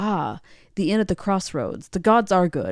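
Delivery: play-acted sarcastic, joking tone. Quoting a character's remark on reaching the same inn: imitating a sarcastic remark. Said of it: "he's being sarcastic".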